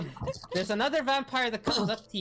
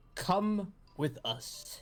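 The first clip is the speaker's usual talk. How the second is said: very intimidating, menacing, low deep voice; 6 dB quieter than usual. Voicing bouncers who glare the players down: very intimidating deep voice. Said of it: "in a very intimidating, deep voice".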